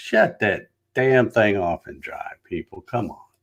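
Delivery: plain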